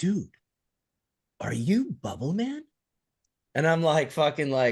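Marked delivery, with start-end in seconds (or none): 0.0-2.6 mock whisper, higher. Retelling what the kid at the rental counter asked: imitating a whisper. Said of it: "he whispers".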